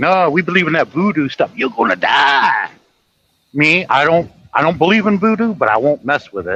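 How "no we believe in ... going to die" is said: laid-on, fake Jamaican accent. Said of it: "they sound like Miss Cleo".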